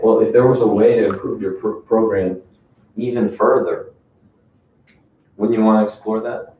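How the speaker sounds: calm, slow, gentle and nice delivery. Demonstrating how to talk to a client about their finances, very calm and slow. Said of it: "I'm talking very nice, very calm, very slow".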